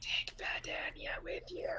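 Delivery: very quiet, hushed whisper. Whispering in character to Jez during the game: whispering in character. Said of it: "I whisper to Jez".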